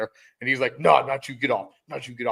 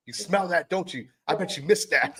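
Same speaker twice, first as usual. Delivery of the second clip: pitched-up drill instructor voice; 6 semitones higher than usual. Retelling a sergeant taunting a recruit with cigarette smoke: imitating Sergeant Garcia. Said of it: "He'd like".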